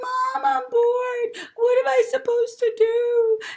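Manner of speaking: very high, very loud whining, whimpering wail. Describing bored kids complaining to parents: imitating a whining, whimpering child. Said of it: "they're whimpering and they're crying".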